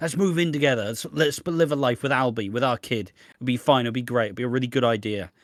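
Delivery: ordinary talk, nothing marked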